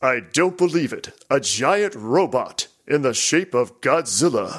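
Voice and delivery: imitated announcer voice. Imitating the game announcer calling a jackpot: imitating the game announcer's voice. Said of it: "A voice like this, and it does the announcing".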